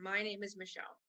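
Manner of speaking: authoritative, commanding tone. Demonstrating to the group how to say the line, speaking with authority. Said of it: "Be like".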